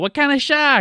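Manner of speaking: very high, put-on Boston townie accent. Retelling a favorite movie scene, quoting the townies: Boston accent. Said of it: "they're all speaking in Boston accents".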